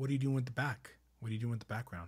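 put-on, courteous yet pointed, firm tone. Retelling how a man questioned the background of their painting, acting out firm but polite questioning. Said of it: "firmly but politely goes".

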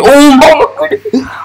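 very high, excited, starstruck squeal.

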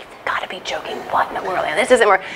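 muttering under breath. A mother recalling a moment when something wasn't working, retelling muttering under breath. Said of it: "I was probably muttering under my breath".

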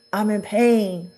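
ordinary talk

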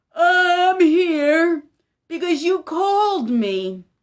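words stretched through yawn. Called out of bed again, Samuel answers Eli in his room: yawning. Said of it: "said with a yawn".

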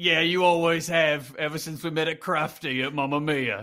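put-on Cockney accent. In an acted scene, speaking to a partner; Cockney Pierce Brosnan voice. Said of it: "I'm gonna be Cockney".

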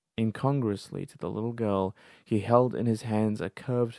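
ordinary delivery

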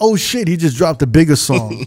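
ordinary delivery

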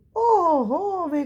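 very high, drawn-out, stretched-out cry. Kyts-kyts reacts to the news about the raven, exclaiming. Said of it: "Вигукнув Киць-Киць".

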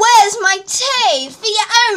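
slow, high, drawn-out, bossy demanding shout. Rehearsing a role after being told to add more effort; shouting a demand. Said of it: "a little more effort".

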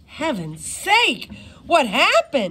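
worried, anxious, high-pitched, slow voice. A doctor rushes onto the scene after a teacher's scream: asking anxiously. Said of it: "Cooper asked anxiously".

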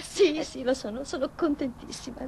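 tearful, crying delivery. Answering someone who has just brought her good news, crying. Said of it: "E perché piangi?".

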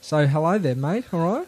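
put-on Australian accent. Starting an improvised sketch, greeting a scene partner in an australian accent. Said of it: "speak with an Australian accent".

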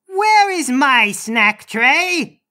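big, loud, booming, roaring bellow. The uncle stands on the pedestal and looks around the room: bellowing. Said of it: "he bellows".

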